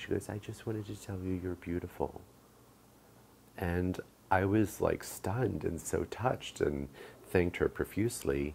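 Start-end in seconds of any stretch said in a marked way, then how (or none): 0.3-2.2 put-on soft, small little girl voice. Retelling what a little girl said to her, the speaker uses a little girl's voice. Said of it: "in her little voice".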